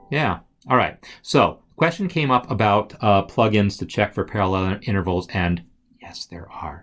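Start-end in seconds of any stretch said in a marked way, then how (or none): 6.0-6.8 soft, secretive whispered aside. Answering a question about plugins, not wanting theory students to hear, whispering. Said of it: "I'm whispering this".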